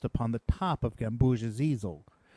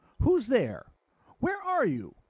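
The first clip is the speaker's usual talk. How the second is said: very high, shaky, trembling, startled; 11 semitones higher than usual. Gamboge, hearing an unseen small voice, calls out: trembling and surprised. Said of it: "exclaimed Gamboge, trembling and surprised".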